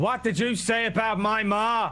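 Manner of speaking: slow, high-pitched shouting.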